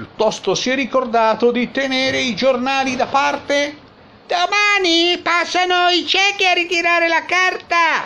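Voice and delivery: very high, rising yell from another room. Narrator reads a man calling to another man, shouting from inside. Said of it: "Urlò da dentro".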